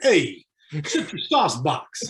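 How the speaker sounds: slow, swooping New York Italian accent. Joking about how a phrase sounds, in a New York Italian accent. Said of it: "like something from some some Italian from New York".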